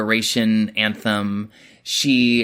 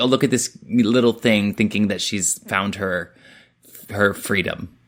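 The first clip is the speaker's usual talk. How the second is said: normal talking voice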